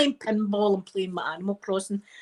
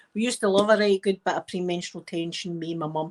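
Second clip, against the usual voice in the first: normal talking voice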